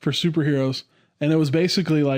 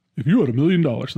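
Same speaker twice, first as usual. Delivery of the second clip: put-on radio announcer voice. Retelling a question once asked on the radio, using a radio voice. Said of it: "Let me let me get my radio voice".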